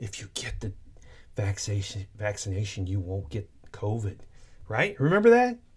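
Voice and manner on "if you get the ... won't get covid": eerie, creepy, very soft hushed whisper. Retelling what someone said while looking him dead in the eye: imitating someone's creepy quiet whisper. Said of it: "quiet talk, like he was whispering".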